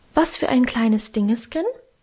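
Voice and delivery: ordinary talk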